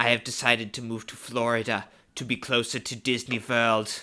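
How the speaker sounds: low pitch held flat and level. Quoting a favorite line from Parks and Rec: Werner Herzog impression. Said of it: "such a good Werner impression".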